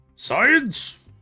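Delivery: very high, showy, grand flourished delivery. Showing how the word should be said: saying it with a flourish. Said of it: "You gotta say it with the flourish".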